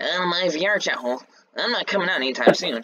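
high-pitched, slow, stretched-out, lingering drawl. Doing an impression of Ethan for the others: imitating Ethan. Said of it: "It's my impression of Ethan".

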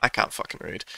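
low, unvoiced, frustrated muttered aside under breath.

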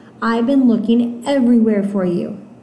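ordinary delivery

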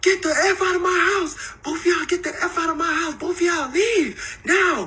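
very high, screeching put-on scream. Acting out what a woman shouted at him and another man: retelling a scream. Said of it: "she starts screaming".

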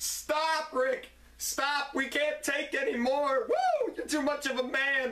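mock lightly played swooning pleading, screaming women. Acting out a wrestler's boast, imitating screaming ladies. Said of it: "All the ladies are screaming".

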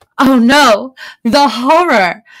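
gasping in mock horror. Reading a character mocking another's complaint, gasping in mock horror. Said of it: "Nazar Mach gasps".

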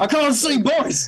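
shouting in a character voice. Playing a blindfolded character, calling to the boys: shouting in character. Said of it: "I'll keep shouting".

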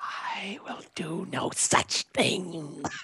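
hoarse, raspy, frightened, hushed whisper. Hiding and summoned by the Brotherhood, the speaker refuses: raspy scared voice. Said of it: "turning into Gollum?".

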